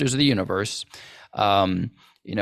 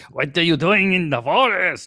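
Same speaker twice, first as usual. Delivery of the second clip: put-on German accent, pitched up; 7 semitones higher than usual. Retelling a cartoon scene, imitating Mirkwood elf king's German accent. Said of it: "he comes out there with that German accent".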